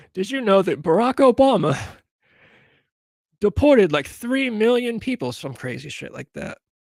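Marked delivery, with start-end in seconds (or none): 0.2-5.3 put-on very high-pitched, loud, botched British accent. Imitating Piers Morgan answering a Democrat in a debate: Piers Morgan impression. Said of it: "I can't even do a British accent".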